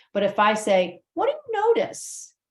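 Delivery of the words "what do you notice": curious, inquiring tone with varied inflection. Demonstrating the voice as a tool, asking with questioning inflection. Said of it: "I'm using inflection".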